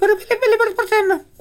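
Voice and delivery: squeaky helium voice.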